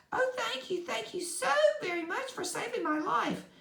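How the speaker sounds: tiny, very high, squeaky mouse voice. A narrator reading a story, voicing the mouse speaking to the woodsman: squeaky little voice. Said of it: "it said in a squeaky little voice".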